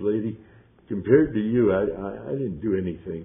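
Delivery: choked-up voice catching, halting, stumbling on "I". Retelling own words to a trauma nurse: retelling own choked-up words. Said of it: "got all choked up and said".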